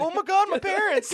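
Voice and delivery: tearful, very high-pitched crying voice. Retelling how a friend ran out of a blown-up car: imitating someone crying. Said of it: "one of your friends ran out crying".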